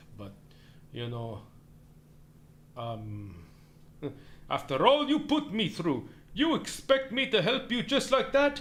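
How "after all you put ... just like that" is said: high, animated-character delivery with Russian accent. Asked to do Jumba's voice, performing a line in a Jumba voice, Russian accent. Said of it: "He has more of a Russian accent".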